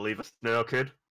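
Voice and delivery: put-on muttering from mouth corner. Retelling what you said to a kid, muttering out of the corner of your mouth. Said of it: "out of the corner of my mouth".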